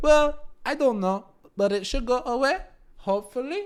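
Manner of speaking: very high, goofy, squeaky, silly put-on voice. Acting out one side of a conversation about it: put-on voice. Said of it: "I don't know why I just did that voice".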